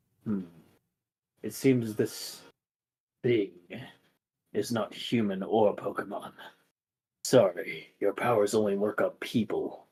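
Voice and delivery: very soft, low, hushed and ominous foreboding voice. Game master voicing a voice the players hear; ominous voice. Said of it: "ominous voice".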